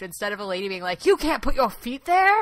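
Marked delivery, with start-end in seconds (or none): 1.1-2.4 high, loud, aggressive scolding. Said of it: "very aggressive about him not putting his feet up".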